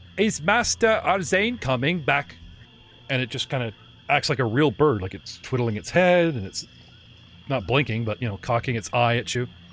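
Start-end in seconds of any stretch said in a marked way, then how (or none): 0.2-2.4 put-on old gramophone voice, high and slow. Narrator voices a bird-like creature asking about its master, gramophonic voice. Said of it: "In a very gramophonic kind of voice".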